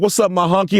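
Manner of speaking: mock proud and friendly tone. Imitating people greeting each other, imitating someone saying it proudly. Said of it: "They gonna have pride when they say it".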